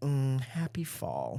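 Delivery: soft, sultry, seductive voice. Recalling his mom's seasonal voicemail greeting, imitating mom's sexy voice. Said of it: "his mom had the hottest voice".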